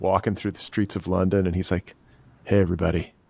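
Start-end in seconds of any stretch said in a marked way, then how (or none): 2.4-3.1 sweet, earnest put-on voice, lower pitched. Imitating selfie videos of Adrien Brody walking through London streets: earnest Adrien Brody impression. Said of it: "really sweet, like, earnest selfie videos".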